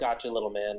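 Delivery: whispered line. Acting out a character's reply under cover: whispering in character. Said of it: "I whisper".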